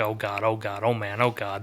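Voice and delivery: put-on terrified, panicky, repeated exclamations. Retelling a scene where the Justice League attacks him, imitating someone terrified. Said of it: "He is scared shitless".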